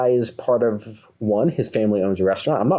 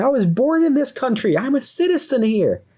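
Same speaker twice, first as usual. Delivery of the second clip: put-on very high, furious angry shout; 14 semitones higher than usual. Retelling a man answering another man who insulted him: retelling a shout back. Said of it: "the guy is shouting back at him like".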